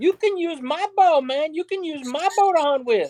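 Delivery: high-pitched surfer dude voice. Retell what the California surfer dude offered you, imitating Dondi's high voice. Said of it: "he talked with a high voice like this".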